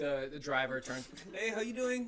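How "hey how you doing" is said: higher-pitched put-on Eastern European accent. Retelling a driver's greeting to friends, in an eastern european accent. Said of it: "Do the accent again".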